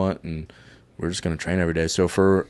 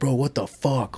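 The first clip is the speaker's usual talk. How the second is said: put-on angry outburst, higher pitch; 6 semitones higher, 4 dB quieter than usual. Retelling a friend's reaction to being downed: imitating someone angry. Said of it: "he's getting pissed".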